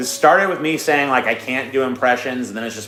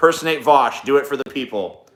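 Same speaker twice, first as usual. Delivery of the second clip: ordinary talk, nothing marked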